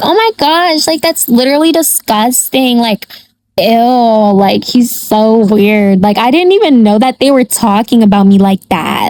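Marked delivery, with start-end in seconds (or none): none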